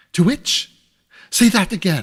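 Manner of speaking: loud, sharp, piercing cry. Narrator reads Smallweed's reply to Mister Bucket, Smallweed's shrill, sharp voice. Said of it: "in a shrill, sharp voice".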